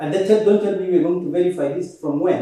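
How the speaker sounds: ordinary talk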